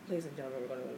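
very deep, very soft pilot-style announcement. Retelling a flight delay, imitating the pilot talking really low. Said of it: "the pilot talked, like, really low".

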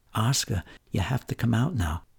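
soft, small, fragile voice just above a half-whisper. Retelling how Laura called to you through the door, imitating Laura's fragile half-whisper. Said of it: "just barely above a whisper in her fragile little voice".

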